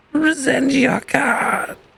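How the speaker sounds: hoarse, rasping, very high croaking voice. Narrating a scene, voice a figure who pulls the listener forward: very raspy voice. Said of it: "just kind of in a very raspy voice goes".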